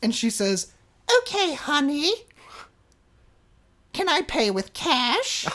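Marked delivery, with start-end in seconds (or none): 1.2-5.5 put-on high voice of a seventy-year-old witch. Imitating an older lady asking the speaker for a room, seventy-year-old witch voice. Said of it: "talked like a seventy-year-old witch".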